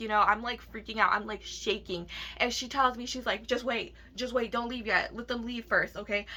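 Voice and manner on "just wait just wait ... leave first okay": ordinary delivery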